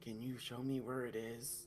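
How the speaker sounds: very quiet, soft, hushed half-whisper under the breath. Telling a story, acting out a character who looks around first, in a hushed half-whisper. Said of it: "kind of whispers".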